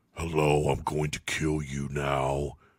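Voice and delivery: dark, deep, low put-on voice, dropped right down. Speaker mimics a movie character who talks like Batman: Batman voice. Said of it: "He talks like Batman".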